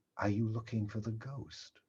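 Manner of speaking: conspiratorial manner. Recapping a scene, voicing a character's question, very conspiratorial. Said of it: "in a very conspiratorial manner".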